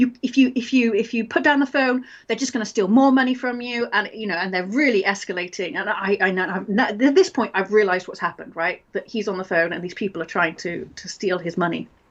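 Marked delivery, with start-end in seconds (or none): 0.0-3.9 put-on aggressive, threatening tone. Retelling a scam call, imitating an aggressive caller. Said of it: "getting more and more aggressive".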